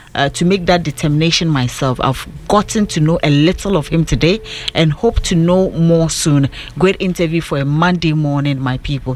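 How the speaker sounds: ordinary delivery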